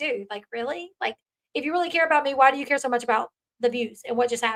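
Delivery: plain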